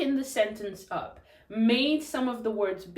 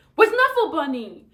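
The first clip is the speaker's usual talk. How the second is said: cross, demanding, angry, raised and pitched up; 6 semitones higher, 7 dB louder than usual. Speaker demonstrating a practice phrase again, now in an angry voice. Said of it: "Say it in an angry voice".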